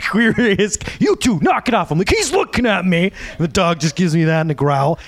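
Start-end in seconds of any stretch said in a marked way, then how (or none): 0.1-1.9 very slow, stretched-out, drawn-out scolding, acted out. Retelling how Nick yelled at the speaker and a friend, imitating Nick yelling. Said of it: "Nick would end up yelling at us like".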